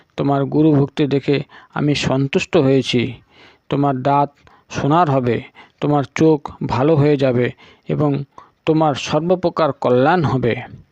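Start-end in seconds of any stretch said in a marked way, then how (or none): none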